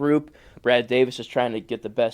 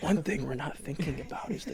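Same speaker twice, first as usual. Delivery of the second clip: mock serious voice, higher and quieter; 3 semitones higher, 10 dB quieter than usual. Imitating a co-host's sudden tone about roster moves: imitating a co-host's serious tone. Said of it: "Your tone of voice there threw me off".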